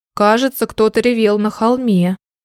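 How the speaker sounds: ordinary delivery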